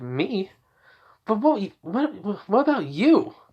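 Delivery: high, halting stutter, tripping over words. Reading Inko's lines in a scene, replying to Kazuki: stuttering as Inko. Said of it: "I'm stuttering because I think she would do it".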